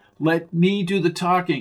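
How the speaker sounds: ordinary delivery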